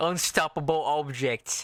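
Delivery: put-on Cockney accent, tripping on vowels. Repeating a hard phrase to get it right: Cockney accent. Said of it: "hard to say in a Cockney accent".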